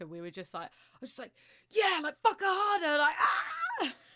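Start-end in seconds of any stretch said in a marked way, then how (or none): 1.7-3.9 mock very high, shrill, swooping, excitable child voice. Retelling a threesome, imitating own past words: retelling own excited outburst. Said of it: "two excitable kids".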